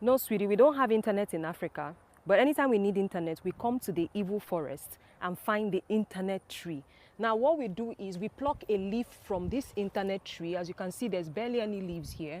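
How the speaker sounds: ordinary talk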